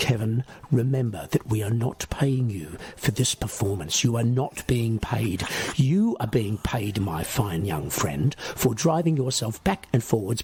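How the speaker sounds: measured, slow, steady, unwavering stern voice. Picturing a stern man addressing Kevin before every performance, a speaker uses a slow, steady voice. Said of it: "say in a slow, steady voice".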